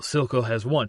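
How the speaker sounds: plain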